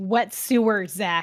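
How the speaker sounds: loud, demanding shout. In a role-play scene, a character questions another character, yelling. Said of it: "Why are you yelling?".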